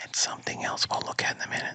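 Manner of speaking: very quiet, breathy, hushed, creepy stage whisper. Hinting at something to look at later: mock whisper. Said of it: "Why are you whispering, dude?".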